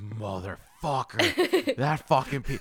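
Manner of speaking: acted, very slow, drawn-out, swooping furious cursing. Retelling a friend's reaction to a prank package: imitating Chris cursing angrily. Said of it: "He was pissed".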